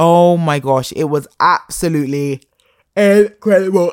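words spoken through yawns, yawning throughout. Recommending a BBC iPlayer show to viewers, yawning. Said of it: "I'm yawning so much".

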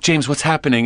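ordinary delivery

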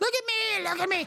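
very high, excited, squeaky voice.

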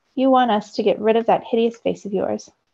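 plain reading voice

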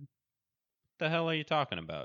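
yell pushed very high. Narrator reads a man answering a woman's accusation: yelling. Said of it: "yelled Braden".

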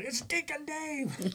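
put-on very high, ringing, high-pitched scream. Retelling how a worker jumped up on seeing him: retelling a scream. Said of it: "he just screamed out".

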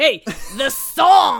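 angry loud Brooklyn shout.

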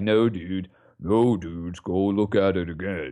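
deep voice, very slow drawl. Retelling a player's reply to the league: imitating his deep voice. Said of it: "In that deep voice that he's got".

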